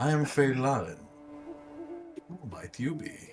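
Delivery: forced, fake confident voice, swooping. Voicing a magical beast speaking into a mind: put-on confident voice. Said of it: "trying to put on a more confident voice".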